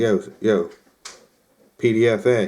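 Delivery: ordinary delivery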